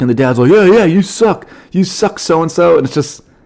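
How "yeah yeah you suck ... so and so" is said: put-on man's yell, higher. Retelling a dad at a basketball game yelling at players: imitating a dad yelling. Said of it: "They were yelling at players".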